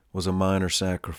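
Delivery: ordinary delivery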